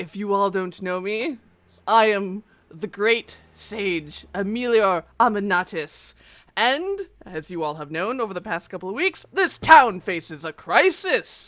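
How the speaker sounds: loud booming voice. Voicing a levitating sage who welcomes everyone to the town meeting: booming voice. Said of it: "this booming voice".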